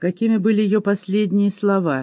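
ordinary talk

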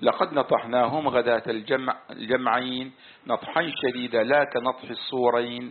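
plain

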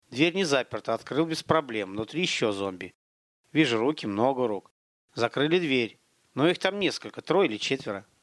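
plain

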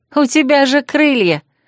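mocking, playful tone. A woman answers her husband's request for a broom ride, mockingly reminding. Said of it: "насмешливо напомнила я".

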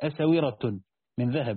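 usual speaking voice

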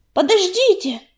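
high, ringing, carrying shout. An unseen speaker calls out to the gathered warriors, shouting. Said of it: "крикнула невидимка".

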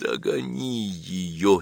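barely getting the words out. Narrator reads a man's line to a man who has just come back, barely getting the words out. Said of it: "еле выговорил Сергей Львович".

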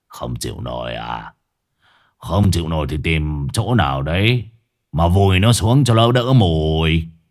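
raspy, hoarse, indifferent, offhand voice. An old man answers a porter's complaint without opening his eyes, hoarse voice. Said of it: "chỉ cất giọng khàn khàn".

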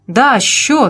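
light, restrained, called out. Narrator reading a man calling to the waiter for the bill: shouted. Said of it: "крикнул Слава".

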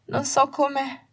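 high, breathless, gasping, cut off mid-phrase. A crying woman, held by her friend, tries to speak: breaking off, struggling to breathe. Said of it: "Si interruppe mentre lottava per respirare".

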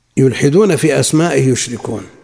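ordinary talk, nothing marked

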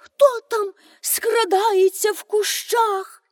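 frightened cry. A countess hears a rustle in the bushes and calls out, a frightened cry. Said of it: "злякано крикнула".

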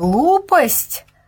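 crowd bellowing the word back, mild roaring echo. The crowd answers the master of the mechanisms, roaring. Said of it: "взревела толпа на разные голоса".

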